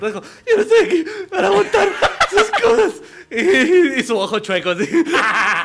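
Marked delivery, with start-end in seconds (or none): 0.0-3.0 mock very high voice, on the verge of tears. Retelling what the teacher said as he began to tear up, imitating his teary voice. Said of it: "ya en esta voz se dijo".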